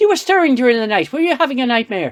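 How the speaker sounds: bad fake Irish accent, very high and quick. Recapping a show, voicing Picard's Irish house servant speaking to him: terrible Irish accent. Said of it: "this is a terrible Irish accent".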